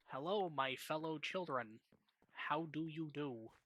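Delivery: put-on out-of-touch old-timer voice, straining to sound hip. Joking about sounding old, playing an old-timer trying to relate to kids. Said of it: "old-timer trying to relate to the kids".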